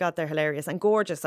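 ordinary talk, nothing marked

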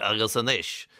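middle-aged man's fake fifteen-year-old voice. Recalling school Irish listening tapes, imitate the tape as a 50-year-old man playing a teen. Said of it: "like a 50-year-old man pretending to be 15".

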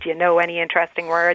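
plain

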